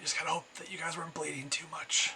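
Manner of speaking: hushed, soft, slightly high half-whisper under the breath. Narrator voicing Angelica to the other players, half-whispering as Angelica. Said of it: "she just whispers".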